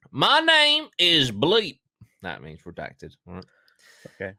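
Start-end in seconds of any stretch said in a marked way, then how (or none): 0.2-1.8 very high, very slow put-on American accent. Reading an investigator's redacted statement aloud, in an american accent. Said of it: "I am going to read it in an American accent".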